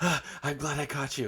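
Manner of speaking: acted out, winded, gasping, out-of-breath panting. Retelling a meme of a woman chasing a man down the street, acting out of breath. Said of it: "she's like out of breath".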